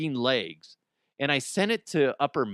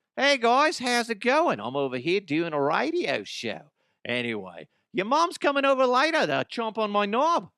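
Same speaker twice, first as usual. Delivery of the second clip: pitched-up, put-on Australian accent, for laughs; 8 semitones higher than usual. Recalling making fun of accents on the radio, the speaker does an australian accent. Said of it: "whether it's Australian, like".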